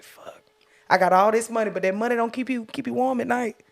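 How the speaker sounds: ordinary talk, nothing marked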